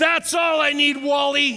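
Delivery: very high, shrill, loud scream. Retelling what the coach yelled onto the bus: imitating someone screaming. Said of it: "he screams to the back of the bus".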